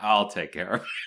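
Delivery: put-on obviously menacing voice. Retelling a film scene where Barnes answers: imitating an obviously menacing line. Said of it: "menacing kind of way".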